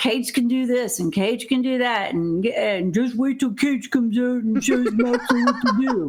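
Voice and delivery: put-on New York accent. Wrestling fan mocks a commentator during a match, Taz New York accent impression. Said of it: "in his New York accent".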